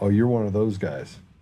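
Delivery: plain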